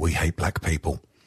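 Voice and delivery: muttered under breath. Retelling what a man says on a recording, muttered under his breath. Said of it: "you'll hear him mutter under his breath".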